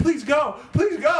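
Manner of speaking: put-on frantic, panicked voice, pitched way up. Retelling begging the nurse to leave: retelling own panicked plea. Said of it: "I'm, like, panicking".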